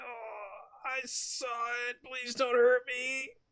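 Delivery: timid meek very soft drawn-out little voice. Voicing a meek witness begging the questioners not to hurt him: meek little guy voice. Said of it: "a meek little guy".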